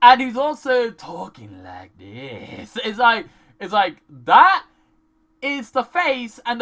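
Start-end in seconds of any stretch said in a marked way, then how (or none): 0.0-2.8 low, slow creepy serial killer voice. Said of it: "the voice someone puts on when they're planning to kill someone".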